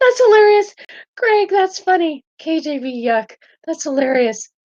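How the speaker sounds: very high pitch, giggles breaking in through the words. Reacting to a viewer comment: giggling while talking. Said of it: "I've got the giggles right now".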